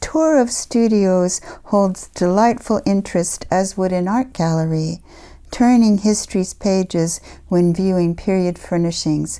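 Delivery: ordinary delivery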